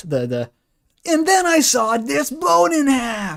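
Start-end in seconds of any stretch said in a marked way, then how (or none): 1.1-3.4 pitched-up TV commercial pitchman voice. Joking about who Asriel sounds like now, do a Phil Swift voice. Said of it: "He sounds like um, Phil Swift".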